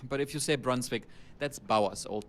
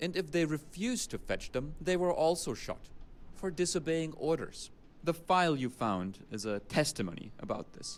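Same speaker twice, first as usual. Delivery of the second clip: put-on speaking in German accent; 4 semitones higher than usual. A game character explains the file that was found, in a german accent. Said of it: "Listen to this German accent".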